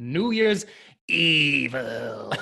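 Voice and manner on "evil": horror-movie killer voice, "evil" drawn out. Introducing the first movie to the audience, in a horror movie killer voice. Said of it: "That's my impression of the killer".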